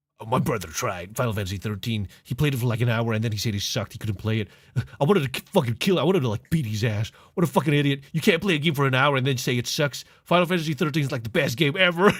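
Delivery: furious, angry, worked-up rant. Retelling what a worked-up friend said about his brother: imitating an angry rant. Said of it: "you gotta calm down, son".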